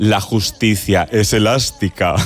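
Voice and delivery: put-on villain voice, low and wicked. Recalling a TV series, the speaker quotes Concha Velasco's character in a wicked voice. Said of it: "decía así con voz de muy mala, malísima".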